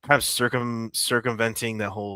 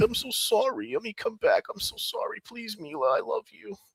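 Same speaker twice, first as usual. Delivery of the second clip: mock tearful groveling, higher; 13 semitones higher than usual. Imitating someone apologizing to his boss: imitating someone crying and groveling. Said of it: "he probably cried and groveled".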